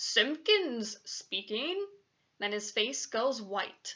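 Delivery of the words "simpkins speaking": soft, self-important, pompous telephone voice. Reading a boy's account of his father answering the phone: very important telephone voice. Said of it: "says in his very important telephone voice".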